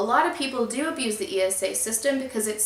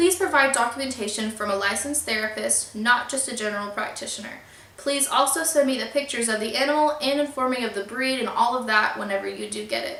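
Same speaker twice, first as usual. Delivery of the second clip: ordinary delivery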